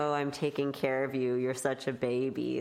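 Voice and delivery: ordinary talk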